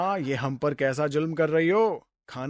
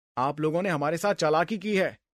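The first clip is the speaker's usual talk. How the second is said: usual speaking voice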